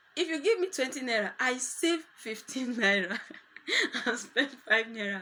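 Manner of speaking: loud, talking while laughing through the words. Speaker talks to the audience, laughing while talking. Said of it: "Sorry that I'm laughing".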